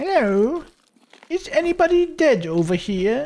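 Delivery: daft, very high, sketch-comedy-style silly voice. Searching for bodies as it gets dark: Monty Python voice. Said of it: "My best Monty Python voice".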